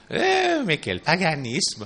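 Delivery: put-on thick, heavy Swiss French accent. Quoting a grandmother's exclamation, heavy Swiss accent. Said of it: "avec leur gros accent suisse".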